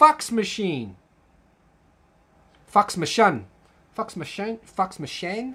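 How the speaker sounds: terrible put-on New Zealand accent. Explaining New Zealand pronunciation, attempting a terrible New Zealand accent. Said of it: "I'm terrible at the New Zealand accent".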